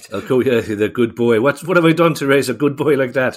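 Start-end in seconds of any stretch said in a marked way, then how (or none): 1.4-3.4 put-on Irish accent, pitched up. Presenter jokingly voices a witness's mother, in a put-on Irish accent. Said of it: "Sorry for the Irish accent".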